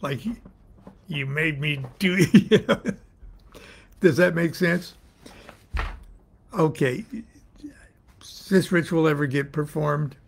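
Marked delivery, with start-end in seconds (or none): 1.1-3.0 much slower, mock-stern officer voice. Describing how the officer gives the speech after a long wait, mock-stern officer voice. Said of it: "gives it to you with a sterner voice".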